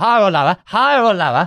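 put-on slight Cockney voice. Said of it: "he had".

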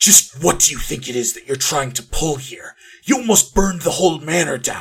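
furious, angry whispering. Narrating a character who pulls the listener into a hallway to scold them, angry whisper. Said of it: "leans forward angrily, whispering".

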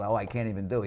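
ordinary delivery

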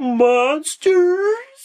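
put-on very high, loud, terrified little kid's shriek. Describing a zombie movie scene with a little kid, imitating a scared kid. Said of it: "how scared is this goddamn kid?".

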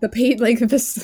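loud scolding yell. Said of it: "yell at him".

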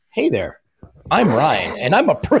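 derisive, scornful professional voice-over style. Mocking the old co-host's video intro: imitating Ryan. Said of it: "He's like".

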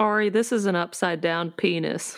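dry, matter-of-fact deadpan delivery, no laughter. Answering in character about a drawn spell symbol: deadpan, straight face. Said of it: "I said that with a straight face".

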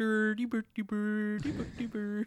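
high-pitched babbling gibberish. Explaining what a subtitled man was saying, doing a Swedish Chef gibberish impression. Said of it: "trying to imitate the Swedish chef".

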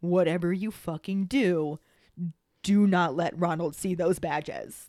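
whispered voice. Retelling a warning from a story: imitating a whisper. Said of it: "she whispers to Harry".

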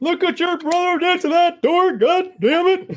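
very high-pitched grandpa voice. As the others name the voice, the speaker performs it: Sawyer voice, grunkle dad. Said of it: "grunkle dad".

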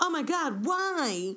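stupidly excited, high, loud, pumped-up squeal.

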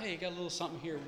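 mock-deadpan delivery. Retelling a joke he still remembers: retelling a deadpan line. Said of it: "This deadpan brother walking up".

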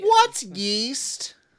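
high-pitched, loud, put-on little child voice. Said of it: "sounding like a child".

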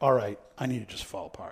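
ordinary talk

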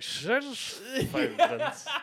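put-on sloppy, slow, very high drunken slurring. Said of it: "even my internal monologue was slurred".

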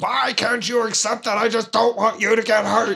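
acted, high-pitched, furious, heated outburst. Retelling a movie character's reaction on learning she's coming along, retelling a super-mad outburst. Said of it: "he gets super mad at her and he's like".

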